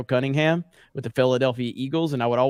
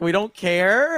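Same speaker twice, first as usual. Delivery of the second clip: put-on dismissive, humoring tone, pitched higher; 7 semitones higher, 4 dB louder than usual. Retelling a parent's reply to a child's excitement: imitating mom's dismissive humoring. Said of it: "my mom would look at me kinda like how we talked to Jay".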